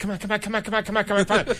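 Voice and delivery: high, rattled-off, impatient hurried delivery.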